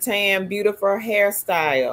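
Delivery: ordinary delivery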